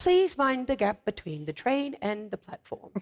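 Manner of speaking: mock British accent in an announcer voice. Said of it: "I've worked on that accent for a long time".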